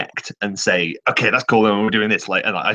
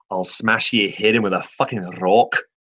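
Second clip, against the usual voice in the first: put-on Scottish accent. Showing the others a trigger line for going scottish: put-on scottish accent. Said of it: "for going Scottish".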